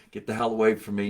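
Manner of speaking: plain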